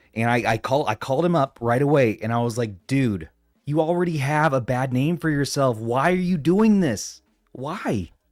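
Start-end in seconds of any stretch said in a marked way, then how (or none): 2.9-8.1 mock screaming in a ranting delivery. Retelling a phone call to Vince McMahon over a copyright claim: imitating own screaming. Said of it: "I was screaming at him".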